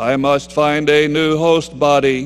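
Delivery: low, level, tormented monotone drone. Suggesting a line to say to the person next to you, tormented monotone voice. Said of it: "say in a tormented monotone voice".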